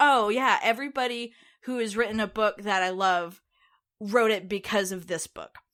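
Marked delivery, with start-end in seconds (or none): none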